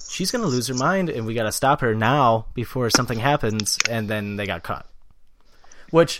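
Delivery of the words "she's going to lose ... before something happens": normal talking voice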